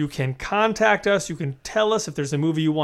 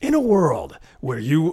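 movie trailer announcer voiceover style; 3 dB louder than usual. Talking about old movie trailer voiceovers, doing a movie trailer voiceover voice. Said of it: "Let me trailer voice everybody".

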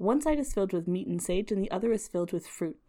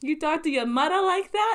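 loud, really bad Italian New Jersey accent; 9 semitones higher, 5 dB louder than usual. Showing the accent being learned for a film role: really bad Italian Jersey accent. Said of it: "this really bad Italian Jersey accent".

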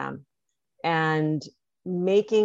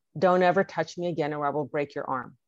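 put-on furious voice, firm and dead serious. Retelling a loud angry warning to a colleague: imitating own loud angry warning. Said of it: "I said loudly".

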